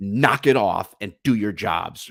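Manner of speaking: put-on frustrated, fed-up sergeant voice. Acting out a sergeant scolding cops who won't do their job: imitating a frustrated sergeant. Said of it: "I can feel the frustration of this, this sergeant".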